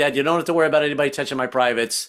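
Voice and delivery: normal talking voice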